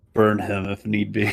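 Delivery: ordinary talk, nothing marked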